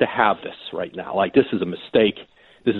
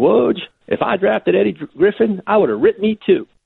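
put-on West Virginia accent, very high; 10 semitones higher than usual. Columnist retelling what a man once said to him, imitating a west virginia accent. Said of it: "in that West Virginia accent".

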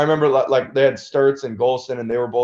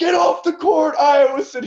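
play-acted, very high, shrill, yelled screaming. Recalling a state tournament game and a fan yelling at the team: imitating a fan screaming. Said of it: "some Newton fan is screaming like".

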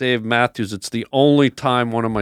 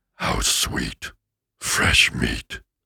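whispered, hushed, breathy demon voice; 6 dB quieter than usual. Challenged to show who has the better demon voice, doing a demon voice. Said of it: "Give me a good demon".

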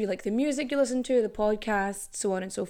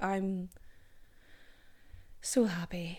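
soft, saddest-sounding voice possible; 3 semitones lower, 8 dB quieter than usual. Thanking listeners for still listening and reviewing, her voice sounding sad. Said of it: "That sounded very sad".

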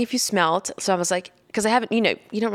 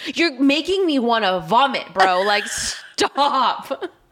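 play-acted, slow, drawn-out, pissed-off, annoyed tone; 3 semitones higher than usual. Retelling how they scolded a partner at night: imitating own angry complaint. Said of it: "I was so pissed".

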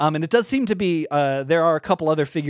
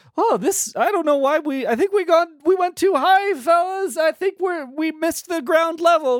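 tiny fairy voice, much higher; 13 semitones higher than usual. Narrating a story, a fairy flies out the door and speaks, tiny Rhymeswell Mirando voice. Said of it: "you hear a tiny voice go".

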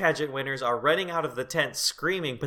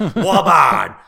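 put-on wild yelling, louder; 14 dB louder than usual. Retelling a movie scene where Animal hurts women by yelling: Animal yelling. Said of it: "Animal is hurting these women by just yelling".

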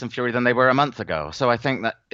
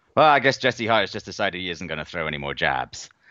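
snarky, sarcastic commentator voice; 5 semitones lower than usual. Retelling a line from a fight commentator: imitating Andre Ward's snarky commentary. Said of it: "in that kind of, like, snarky Andre sort of way".

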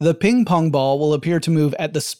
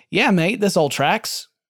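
put-on casual, jokey, easygoing friendly voice; 3 semitones higher than usual. Explaining relativity, imitating Isaac Newton agreeing: put-on casual voice for Isaac Newton. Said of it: "I don't know why he talked like that".

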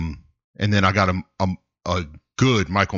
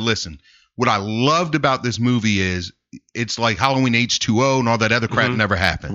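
normal talking voice

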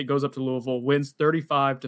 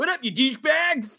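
high, brash 90s talk radio jock voice; 11 semitones higher than usual. Opening a podcast episode with more enthusiasm, greet the listeners in a Trey Rowland impression. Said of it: "that's my Trey".

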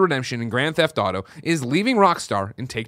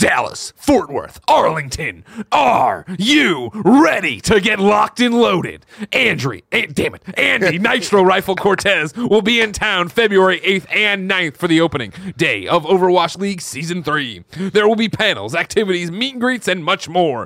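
hype, epic esports announcer voice, higher and louder; 6 semitones higher, 4 dB louder than usual. Reading an event ad as the notes ask: epic esports announcer voice. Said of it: "Use Epic Esports announcer voice".

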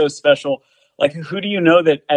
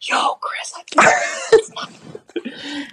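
very slow, drawn-out, hushed whisper; 11 semitones higher, 3 dB quieter than usual. Retelling telling the drummer at sound check he spots [name]: retelling a whisper. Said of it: "kinda whispering to him".

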